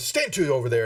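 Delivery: put-on sharp, barked delivery. Voicing a captain giving a guard an unneeded command: barking a command. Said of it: "And he kinda barks".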